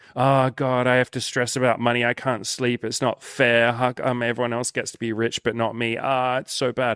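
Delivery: mock complaining, whiny voice. Imitating own past complaining about money: mock complaining. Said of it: "we complain and we do a good little charade".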